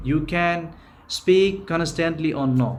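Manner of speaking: normal talking voice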